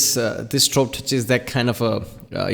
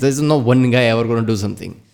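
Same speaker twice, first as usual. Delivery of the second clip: plain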